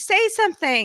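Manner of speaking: high crowd shout. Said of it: "everyone's shouting".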